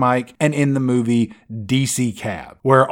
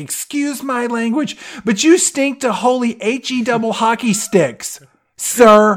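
very high, screaming, scolding tone; 11 semitones higher than usual. Describing a boy headed to the shower: imitating a mom screaming. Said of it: "his mom is just screaming at him".

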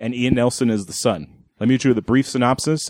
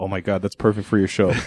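put-on whisper, lower; 3 semitones lower than usual. Retelling what she whispered after a trailer: imitating someone whispering. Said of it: "she whispered in my ear".

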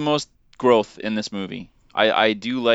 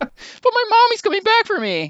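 mocking, very high-pitched, swooping voice; 4 dB louder than usual. Mocking a movie heroine who puts on her helmet: mocking imitation of Rey. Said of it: "puts on her helmet, like".

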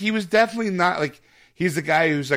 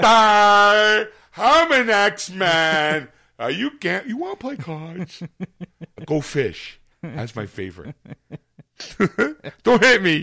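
very slow, simple, dim-witted and passive voice; 4 semitones higher, 3 dB louder than usual. Improvising a cast character just described as simple and dim-witted: simple, dim-witted voice. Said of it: "A little simple, dim-witted, and passive".

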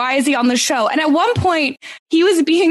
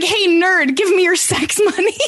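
put-on taunting voice, pitched higher; 5 semitones higher than usual. Acting out what Lana says to someone in the halls, imitating Lana. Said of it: "Lana's like".

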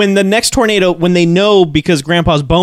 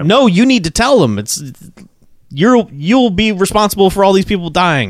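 plain

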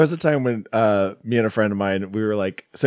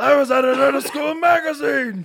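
very high, squeaky put-on character voice, pitched way up. Doing a quick impression while chatting with another speaker: Lemmy voice. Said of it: "That's my Lemmy impression".

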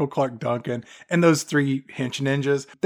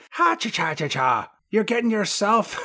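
put-on faint, watered-down Irish-Thai accent, pitched up; 6 semitones higher than usual. Retelling a scene where M. Bison turns to young Chun-Li: watered-down Irish-Thai accent. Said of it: "with this watered down Irish / Thai accent".

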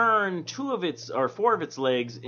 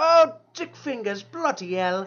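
put-on old English accent, higher and louder; 8 semitones higher, 4 dB louder than usual. Acting out a guy in merry old England: mock merry old England accent. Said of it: "I'm gonna assume merry old England".

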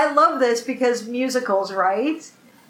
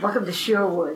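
put-on voice with a slight East Coast accent; 6 semitones lower, 4 dB quieter than usual. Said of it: "with that slightly East Coast accent".

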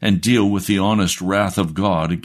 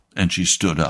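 plain

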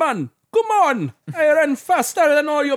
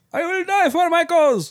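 put-on Turkish accent; 3 semitones higher than usual. Answering 'Who's this?' as someone from Turkey, put-on Turkish accent. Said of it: "Is that a Turkish accent?".

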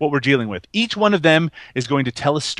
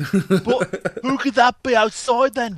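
mock Northern English accent, higher; 8 semitones higher than usual. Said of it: "Manchester and fucking Liverpudlian".

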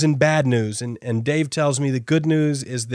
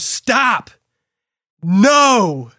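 high, raised yell with long stretched no; 8 semitones higher, 6 dB louder than usual. Retelling a fall down a mountain: imitating Dave screaming. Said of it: "Dave screams".

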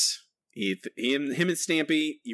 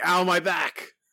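put-on cartoon character scream; 3 semitones higher than usual. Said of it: "Homer is tossed outside screaming".

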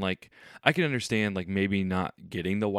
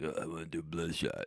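grumbling movie-star impression, much quieter and lower; 3 semitones lower, 10 dB quieter than usual. Quoting Vin's answer when Sony offers him a project, in a grumbling Stallone voice. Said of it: "That was your Stallone voice".

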